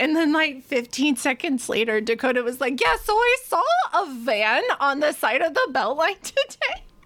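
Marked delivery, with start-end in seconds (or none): 2.8-6.8 put-on dorky Wisconsin accent, laid on thick, pitched up. Speaker retells a drive back from the grocery store, doing Dakota's Wisconsin accent. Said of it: "you doing Dakota's Wisconsin accent is just sending me".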